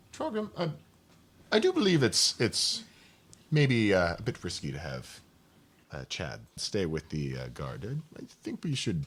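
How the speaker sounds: hesitant, hushed, halting half-whisper. During a game, a player's character half-whispers in a companion's ear, half-whispering. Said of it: "I whisper in, in Trogrim's ear".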